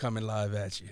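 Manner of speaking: put-on deep voice. Teasing a friend on live, saying coming live in a put-on deep voice. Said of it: "I'll give you that, like, that deep voice".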